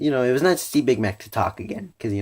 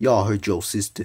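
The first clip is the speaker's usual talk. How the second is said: put-on deep male voice. Explaining how a character talks, doing a Big Mac impression. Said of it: "but he talks like this".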